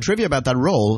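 ordinary delivery

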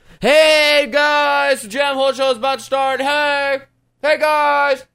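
very high, shrill, obnoxious hype yelling like a megaphone. Showing what not to do on a social network: obnoxious megaphone yelling. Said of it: "a megaphone just yelling his bullshit".

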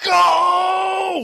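long, very high, drawn-out yell. Game narrator voicing a woman who stands and sends the visitors away, yelling. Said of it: "she just stands up and yells".

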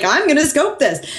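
mock sloppy drunk talk, high drunken voice. Retelling a drunk friend's announcement while hanging out drinking, imitating a drunk friend. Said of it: "he's like drunkenly like".

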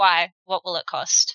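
very flat deadpan monotone, no inflection. Retelling the moment the mask drops, Zell's flat voice. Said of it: "in his very flat voice".

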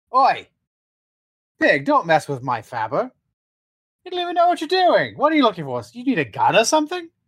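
high, swooping character voice. Voicing Roger, who wanders over to a player at his Faber: Roger voice. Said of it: "he sort of wanders over and goes".

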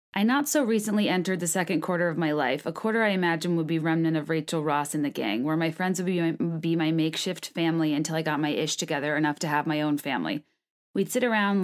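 normal talking voice

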